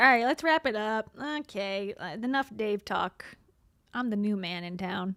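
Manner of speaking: mock uncomfortable man's voice. Reacting to a clip, voicing the new partner: imitating an uncomfortable man. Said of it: "He seems uncomfortable. He's like".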